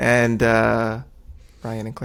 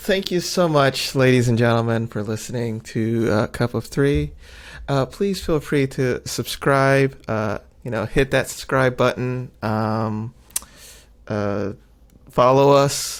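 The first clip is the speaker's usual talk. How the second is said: normal talking voice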